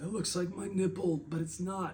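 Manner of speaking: mimicked feeble voice. Retelling what a man said from a hospital bed, imitating a weak voice. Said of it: "he says weakly through his voice".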